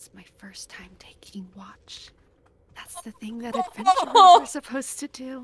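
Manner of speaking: muttered under the breath. A character on first watch, speaking to a companion, muttering very quietly. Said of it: "muttering very quietly to Reginald".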